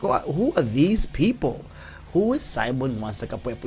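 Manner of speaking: ordinary talk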